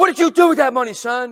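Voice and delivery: very loud, high-pitched yelling. Acting out a parent scolding his son: father yelling at son. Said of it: "you're just yelling at him and yelling at him".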